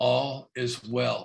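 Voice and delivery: very slow, deliberate, each word drawn out. Retelling how a man answered a question about spiritual truth, very slow. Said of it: "he says it really slowly".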